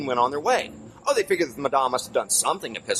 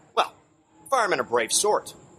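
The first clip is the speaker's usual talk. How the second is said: plain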